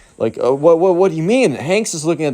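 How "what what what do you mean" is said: put-on stunned, stammering child voice, higher pitch. Retelling how a kid reacted when a mall cop called him: imitating a stunned, stammering kid. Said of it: "the emo kid is practically speechless".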